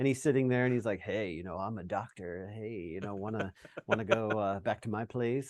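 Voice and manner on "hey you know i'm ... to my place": play-acted, slow, flirty come-on delivery. Retelling a deleted scene where a man hits on nursing-home ladies: imitating a flirting pickup line. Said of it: "hitting on the ladies at the nursing home".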